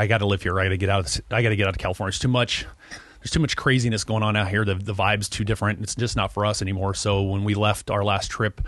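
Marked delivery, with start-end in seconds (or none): none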